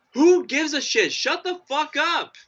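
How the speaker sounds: mock screaming at top of lungs, very high-pitched. Retelling what the speaker shouted back at a man yelling at a building, retelling a top-of-lungs yell. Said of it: "at the top of my lungs like".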